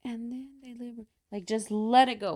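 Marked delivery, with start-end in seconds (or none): 0.0-1.1 soft, held-in, swallowed, held-back speech. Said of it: "you hold it to".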